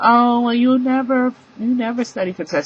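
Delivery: teacher's chiding tone.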